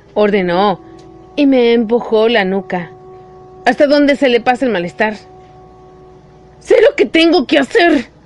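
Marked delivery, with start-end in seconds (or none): 6.6-8.1 raised, protesting, objecting tone. Pushed down by Douglas, the narrator answers his order: protesting. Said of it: "Protesté".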